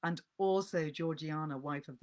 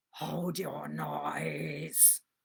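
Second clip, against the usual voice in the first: rough, terrible, menacing cry, noise drawn out. Narrator reading a man's cry to the child from among the graves, terrible voice crying out. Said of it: "cried a terrible voice".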